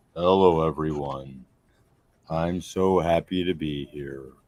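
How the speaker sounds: cartoon donkey character voice. A guest being introduced on a show greets everyone, doing an Eeyore impression. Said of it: "That's my ear impression".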